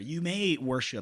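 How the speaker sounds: normal talking voice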